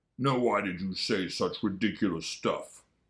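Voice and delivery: terribly gruff, rough growling voice. A big bear answers the boasting rabbit, a gruff growl. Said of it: "growled a voice that was terribly gruff".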